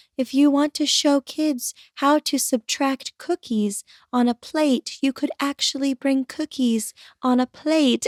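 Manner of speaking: soft, gentle, soothing, calming voice. Describing a former teacher's class, imitating her soft voice. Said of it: "her voice was so soft and she would talk like this".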